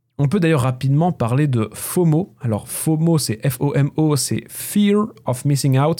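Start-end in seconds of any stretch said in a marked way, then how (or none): 4.5-6.0 full-on English accent, laid on thick. Explaining what an English acronym stands for: English accent. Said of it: "j'ai un accent anglais".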